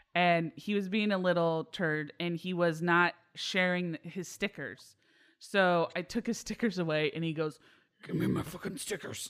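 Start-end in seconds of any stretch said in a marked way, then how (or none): 8.1-9.3 fast, low, growly near-whisper under the breath. Retelling what he said when his stickers were taken away: low growly voice. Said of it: "He gets this really low growly voice".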